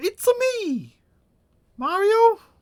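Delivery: squeaked out high and slow. Asked for last words as Mario, the speaker answers in a bad Mario impression. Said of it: "That was such a bad Mario impression".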